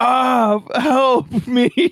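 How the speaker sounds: loud, high-pitched screaming. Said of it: "Like, screaming someone to help him".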